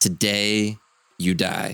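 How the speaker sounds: ominous, menacing, brief delivery. Staring into the hole and speaking briefly: ominous, brief threat. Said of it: "an ominous stare into the hole and just briefly say".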